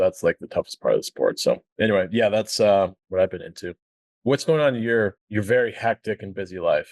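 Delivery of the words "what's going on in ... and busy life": heavy, dripping, extreme sarcasm. Asking the other speaker what is going on in their life: extremely sarcastic. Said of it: "I say that extremely sarcastically".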